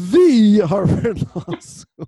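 word the stressed heavily. Retelling an old running joke, heavy stress on the. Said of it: "the joke became to like emphasize the word the more and more".

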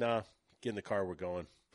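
normal talking voice

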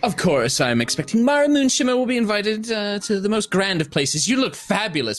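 very high-pitched, admiring, flattering character voice. Voicing Mara, showing the invitation to the guards: Mara character voice. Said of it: "Mara will step forward".

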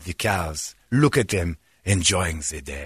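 low, put-on French cartoon skunk voice. Retelling a cartoon scene where the character walks through France: Pepe Le Pew voice. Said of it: "he'd be like".

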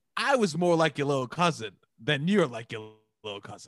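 plain

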